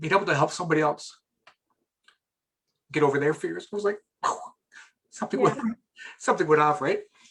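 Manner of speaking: close to tears, choked up, words catching. Recalling helping someone get over their fears, choked up with emotion. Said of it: "I still get choked up talking about this".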